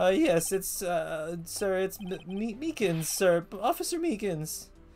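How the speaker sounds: silly, high-pitched, dragged-out voice. An officer answers when asked his name, goofy Officer Meekins voice. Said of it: "did a goofy voice is this officer".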